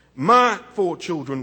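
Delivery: emphasis landing on the word "my". Quoting the I Have a Dream speech, stress on the word "my". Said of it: "I put emphasis on my".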